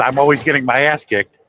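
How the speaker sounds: normal talking voice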